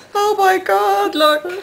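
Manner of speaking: high slow frightened gasp. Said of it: "you've got this scared look in your face".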